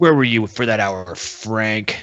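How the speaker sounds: ordinary delivery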